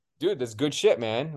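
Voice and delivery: ordinary talk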